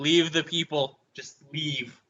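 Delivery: mild, half-shouted yelling. In a role-play game, answering a character who is cursing at you, yelling. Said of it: "I yell at him like".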